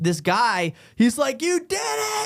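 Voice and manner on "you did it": put-on very high, excited, cheering shout. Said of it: "You can hear him yelling to the guy".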